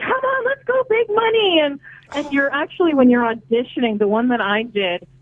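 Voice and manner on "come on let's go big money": acted, very high, bubbly, happy cheer. Retelling how they acted at a game-show audition: reenacting bubbly, happy cheering. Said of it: "be all bubbly and happy".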